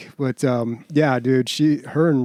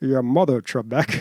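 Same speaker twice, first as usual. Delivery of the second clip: put-on Scottish accent in film star style. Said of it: "he was always on S N L".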